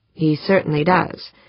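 ordinary delivery, nothing marked

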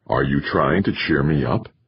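plain

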